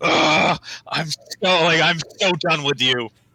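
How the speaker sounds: full-on furious, raging, fed-up outburst. A raging character claws up a crate toward a woman, furious raging. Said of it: "as as Gick rages".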